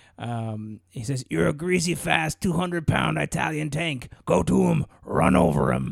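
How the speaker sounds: put-on gritty character voice. Quoting a line from Rocky, done in a gritty Mickey voice. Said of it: "I'll do it in my Mickey voice".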